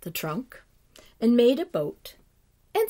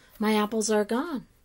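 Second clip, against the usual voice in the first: ordinary delivery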